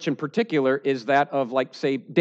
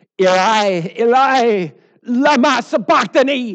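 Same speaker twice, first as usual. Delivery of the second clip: loud, high, anguished crying-out; 8 semitones higher, 8 dB louder than usual. Retelling the crucifixion at the ninth hour, a Jesus's loud cry impression. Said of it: "that's my best impression of whatever that sounded like".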